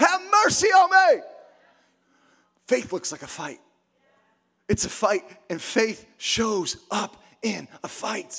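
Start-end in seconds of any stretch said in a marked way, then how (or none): 0.0-1.2 loud male shout, higher and louder. Retelling a blind man calling out to Jesus: imitating a man shouting loudly. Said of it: "shouting at the top of his lungs".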